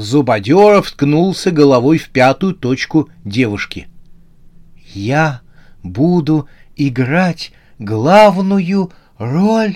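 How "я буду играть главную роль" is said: slow, quavering, wavering, trembling voice. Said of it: "с дрожью в голосе проговорил азиатка".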